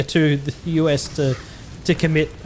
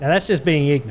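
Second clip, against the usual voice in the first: ordinary delivery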